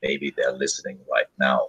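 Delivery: very low, very quiet, hushed murmur. Voicing a character who warns that others may be listening: lowered voice. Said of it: "lowers his voice and says".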